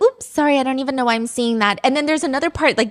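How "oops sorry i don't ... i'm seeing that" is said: apologetic, teacherly tone. Retelling what the teacher says in her clips: imitating the teacher. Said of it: "And then she'll be like".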